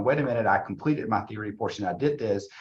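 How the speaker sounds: ordinary talk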